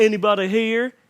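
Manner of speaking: put-on drawling actor voice. Retelling an actor at an empty register: stupid McConaughey voice. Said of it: "In his stupid McConaughey voice".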